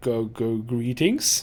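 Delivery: slow, thick, dragging zombie-like voice. Narrator voicing a decaying woman's greeting, slow and thick. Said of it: "Her voice is slow and thick".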